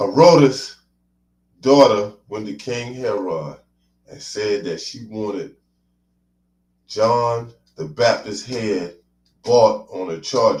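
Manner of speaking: deliberately slowed, very slow, carefully spaced delivery.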